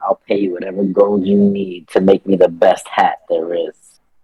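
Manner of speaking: close, uncomfortable whisper. A player's character leans uncomfortably close to the artificer, whispering. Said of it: "lean into him uncomfortably close and whisper like".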